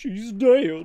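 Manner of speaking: very loud, high, goofy cartoon voice. A video game character speaks in a goofy voice. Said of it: "that's a goofy voice".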